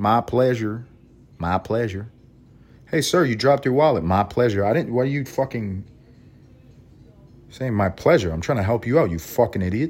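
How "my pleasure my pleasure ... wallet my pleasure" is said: put-on Southern accent. Speaker imitating a southern person, in a put-on southern accent. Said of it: "you hear somebody that's Southern".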